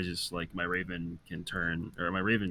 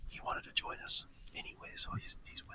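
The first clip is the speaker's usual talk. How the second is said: very quiet, hushed whisper; 9 dB quieter than usual. Playing a character who answers an ally quietly: whispering in character. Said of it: "but I whisper back".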